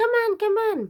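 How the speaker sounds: tiny, very high, squeaking mouse voice. Retelling how Jack hurries the others along in the film: mouse impression. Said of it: "that's a mice impression".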